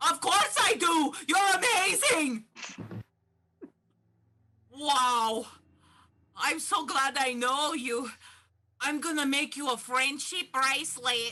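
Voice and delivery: shrill, high-pitched yelling. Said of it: "you don't have to yell at me".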